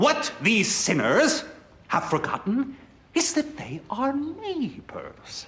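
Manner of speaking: whispered, breathy, fiery preacher-style cadence. Recapping a Voyager episode, acting out the Doctor preaching in church, fire-and-brimstone tone. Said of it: "in a very like fire and brimstone tone of voice".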